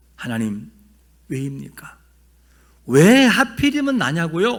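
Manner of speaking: protesting, indignant tone.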